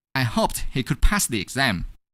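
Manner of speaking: ordinary delivery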